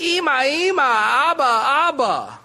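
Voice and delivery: put-on very slow, high whiny child voice, "Abba" stretched. Showing how kids call out, in a high-pitched annoying little voice. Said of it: "in that high-pitched, annoying little voice kids do".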